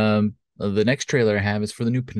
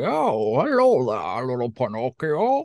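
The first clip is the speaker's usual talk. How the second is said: fake-sounding, put-on old man voice; 4 semitones higher than usual. Mimicking Tom Hanks greeting Pinocchio in a movie, in Tom Hanks's old man Geppetto voice. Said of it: "Tom Hanks doing like this old man Geppetto voice".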